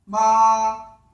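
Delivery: ma held flat and high on the first tone. Teaching tones, showing the first tone: high level tone on ma. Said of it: "끝까지 솔음을 유지하는 겁니다. 따라서 일성은 마 이렇게 하는 겁니다".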